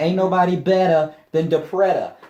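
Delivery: put-on New England accent. Show the others a line of yours that relies on a new england accent. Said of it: "with like a New England accent".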